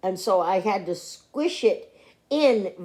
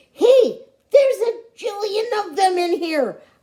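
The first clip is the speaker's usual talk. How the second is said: very high, overjoyed, excited hollering; 11 semitones higher, 4 dB louder than usual. Narrator in a library full of books hollers to everyone: excited hollering. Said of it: "I hollered, feeling very excited".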